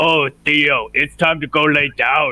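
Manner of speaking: one-eyed monster voice. Tabletop player speaking to Theo in the game, mimicking a cyclops voice. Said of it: "try and mimic the Cyclops' voice".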